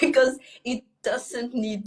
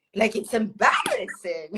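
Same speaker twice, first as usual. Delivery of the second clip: plain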